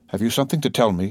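ordinary delivery

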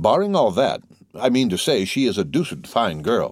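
usual speaking voice

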